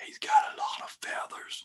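very quiet, hushed, barely audible whisper. Game narrator voices a figure the players overhear: whispering. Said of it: "you hear one of them whisper".

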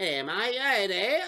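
slow, teasing, put-on Australian accent. A dad teasing his daughter by talking Australian, in a put-on Australian accent. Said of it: "I started talking Australian".

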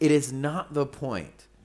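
very loud, fired-up, worked-up insistent outburst. Arguing about division in the church, getting worked up. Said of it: "I am getting worked up".

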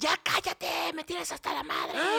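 ugly, rough high-pitched yell. Retelling how his boss snapped at him for laughing loudly: imitating the boss yelling nastily. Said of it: "Y empezó a gritar así, pero feo".

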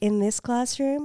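put-on creepy delivery. Showing how the teacher says the line: imitating a creepy delivery. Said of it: "she says it like this".

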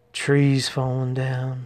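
muttering under the breath. Dobro keeps grumbling while the Errolsons ignore him, muttering under his breath. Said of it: "Dobro continued under his breath".

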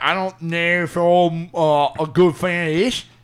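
bad put-on English accent. Joking about not knowing if he's a fan: bad English accent. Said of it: "That's like a bad English accent".

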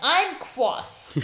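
put-on high, babyish little voice. Imagining an all-powerful being scolding, in a baby voice. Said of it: "a baby voice being like".

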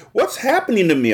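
tiny, high, mouse-like squeaky cry. Reading a story aloud, a character transformed into a bug: squeaky little voice. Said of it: "I cried in my squeaky little voice".

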